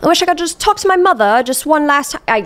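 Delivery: clumsy, high-pitched, bad put-on Australian accent. Retelling a man's words from a saga, in a bad Australian accent. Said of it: "I can't even do an Australian accent".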